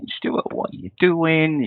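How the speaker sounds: high, mock anxious little inner voice. Telling a guest about his nerves before recording, imitating nervous inner voice. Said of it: "I always get this nervous voice saying".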